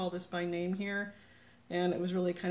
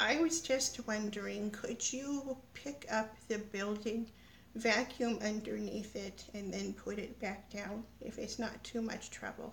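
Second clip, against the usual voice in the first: soft put-on old lady voice; 2 semitones higher, 5 dB quieter than usual. Retelling a prank call made to their mom, in an old lady voice. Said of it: "prank call my mom with an old lady voice".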